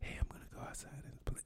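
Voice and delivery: whispered voice. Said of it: "It's whispering or some shit".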